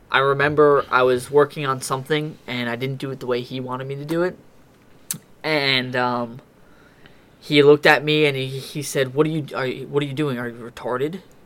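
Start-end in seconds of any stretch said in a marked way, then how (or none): 9.1-11.2 acted angry, mock-scolding tone. Retelling what a man said when the work wasn't done his way: retelling an angry question. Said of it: "he got like very angry".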